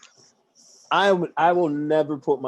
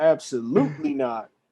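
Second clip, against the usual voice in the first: ordinary talk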